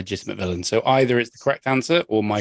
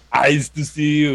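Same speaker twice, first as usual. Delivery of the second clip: high, very slow villain voice, each word dragged out; 6 semitones higher, 4 dB louder than usual. Imagining the character doing Mister Freeze lines: Arnold Schwarzenegger as Mister Freeze. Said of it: "he'd just start doing Mister Freeze lines".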